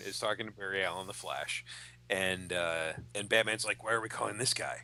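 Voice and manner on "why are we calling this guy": ordinary talk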